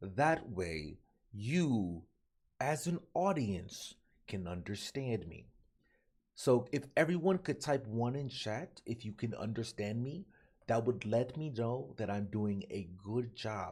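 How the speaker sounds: slow, over-enunciated, drawn-out, low and soft. Mocking people who talk slow, imitating a slow talker addressing chat. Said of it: "I hate people that talk slow".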